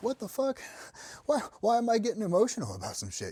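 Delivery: high, fast, exasperated, bewildered outburst.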